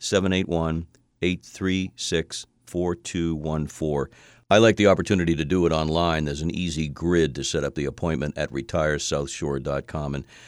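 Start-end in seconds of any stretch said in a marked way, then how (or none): 0.0-4.1 said more slowly. Giving the office phone number and repeating it for listeners, slower. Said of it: "I'll say it again slower".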